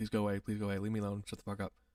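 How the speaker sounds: muttering under breath. Retelling what they kept saying to an annoying person: retelling muttering under breath. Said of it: "very under my breath".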